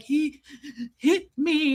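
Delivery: crying hard, gasping and sobbing, struggling for breath. Retelling what you said to your dad back then, imitating gasping sobs. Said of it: "trying to get out the words".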